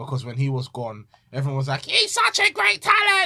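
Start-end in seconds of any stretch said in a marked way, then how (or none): 1.8-3.3 put-on very high, loud, drawn-out voice. Act out what everyone was saying while he was gone, copying the listener's voice. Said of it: "I need to stop copying your voice".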